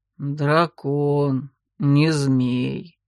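calm, low, phlegmatic, impassive tone. The huge scaly creature corrects the narrator's thought, phlegmatic correction. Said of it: "флегматично исправил".

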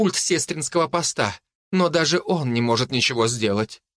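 plain

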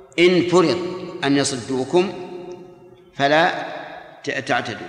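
normal talking voice

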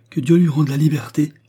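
high, trembling with delight. Narrator reads a man's reply to the priest, trembling with pleasure. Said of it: "dit Beausire en tremblant de plaisir".

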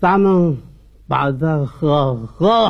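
put-on drunk man's voice.

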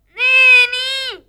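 loud, high-pitched calling yell.

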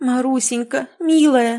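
worried, excited, agitated, anxious outcry. Narrator reads Katerina Ivanovna answering the girl Marusya, agitated exclamation. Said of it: "взволнованно воскликнула Катерина Ивановна".

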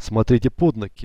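plain reading voice

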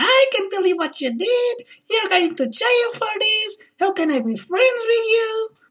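high, hysterical, accusatory outburst. Retelling what she said about the body, acting out her hysterical reply. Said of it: "And she's all hysterical".

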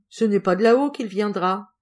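playfully teasing. A woman points at the sky and teases the narrator, mischievously. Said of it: "me disait malicieusement".

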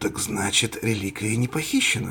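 plain

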